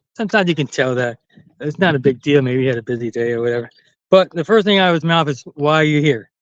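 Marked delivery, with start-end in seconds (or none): 5.6-6.2 condescending, talking-down tone. Retelling what a young doctor first asked: imitating a condescending question. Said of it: "he said it in a condescending fashion".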